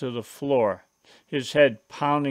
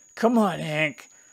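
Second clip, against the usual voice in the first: put-on wheezy voice; 4 semitones higher than usual. Narrator carrying his brother toward the house, urging him on, wheezing. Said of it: "I wheezed".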